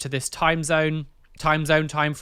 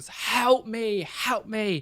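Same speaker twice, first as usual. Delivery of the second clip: put-on, very slow, stretched-out screaming at full volume; 6 semitones higher, 3 dB quieter than usual. Retelling the mother outside the front door, imitating someone screaming at the top of her lungs. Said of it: "top of her lungs".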